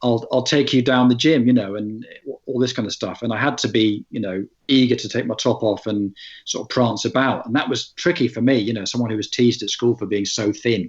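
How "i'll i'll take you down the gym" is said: put-on northern English accent. Quoting his own line from a play of the Full Monty: northern English accent. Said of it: "but in a northern accent".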